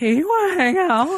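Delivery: very high, weird squeak with voice cracking. Describing a cute guy with a weird voice, quote him asking to hang out: imitating a squeaky voice. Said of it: "had a really weird squeaky voice".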